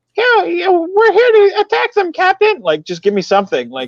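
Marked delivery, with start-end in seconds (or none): 0.1-2.6 high, loud, squeaky voice. Imagining a Mickey Mouse character answering him instead, in a Mickey Mouse character voice. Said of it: "take a Mickey Mouse character".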